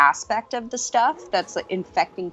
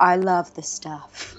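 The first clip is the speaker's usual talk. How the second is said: put-on husky woman's voice. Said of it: "With the husky voice".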